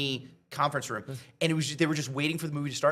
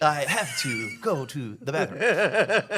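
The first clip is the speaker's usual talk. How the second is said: very slow, deliberate, drawn-out words. Telling a story about a fan event, saying the line as William Shatner. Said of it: "that was more William Shatner".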